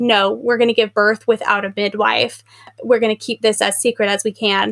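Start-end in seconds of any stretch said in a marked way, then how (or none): none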